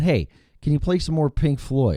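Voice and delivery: sarcastic, falsely sincere delivery. Retelling what you said when you called in live to him, retelling a sarcastic request. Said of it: "sarcastic me".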